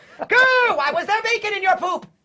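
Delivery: shrill, very high, very loud acted character shriek. Answering whether Zim would try milk, in character: Zim voice.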